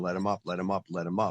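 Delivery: plain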